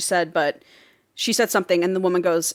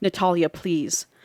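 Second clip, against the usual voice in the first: imitated whisper. Retelling a tense moment between two characters: retelling a whisper. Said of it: "Allison whispers".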